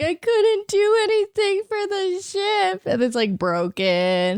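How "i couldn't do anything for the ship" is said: mock high, tearful crying and sobbing. Retelling a scene where Chopper cries about the ship: imitating Chopper crying. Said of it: "He's all, like, crying".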